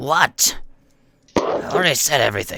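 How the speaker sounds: screeching, pained-sounding voice.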